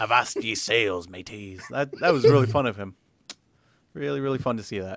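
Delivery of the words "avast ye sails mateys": put-on low, slow pirate voice. Speaker riffs on a review score, doing a pirate impression. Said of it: "He does a good pirate impression".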